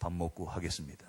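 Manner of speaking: very low, deep bass register voice. Retelling answering people watching him in a tense moment, in a low voice. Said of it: "제가 이 저음으로".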